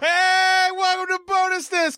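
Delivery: screaming. Opening the show and welcoming the listeners: screaming. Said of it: "Sorry for screaming".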